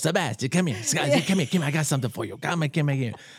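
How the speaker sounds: put-on Sicilian grandmother voice. Retelling a comedian's story about his grandmother calling him over: imitating a Sicilian grandmother. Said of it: "She goes".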